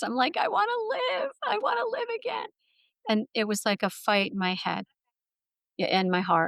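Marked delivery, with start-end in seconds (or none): 0.4-2.5 very high-pitched scream, crying through tears. Retelling a plea shouted at the universe: imitating own past crying shout. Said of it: "I'm crying and screaming t-, at the universe".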